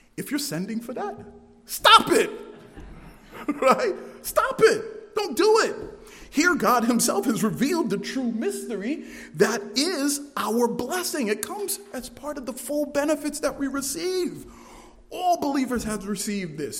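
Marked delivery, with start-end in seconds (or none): 0.2-5.8 raised voice, words spilling through a laugh. Warning listeners not to send money to false prophets, laughing while talking. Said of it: "even though I'm laughing".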